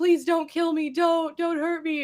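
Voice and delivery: high, pained, agonized, pleading creature cry. Retelling what a terrifying bear says whenever it opens its mouth: imitating a bear screaming in agony. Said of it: "screaming in agony".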